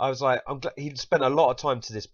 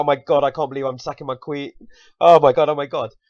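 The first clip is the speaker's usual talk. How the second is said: acted-out panic, much louder; 2 semitones higher, 9 dB louder than usual. Recounting own chess game move by move, imitating own panic. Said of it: "I'm panicking and I'm like".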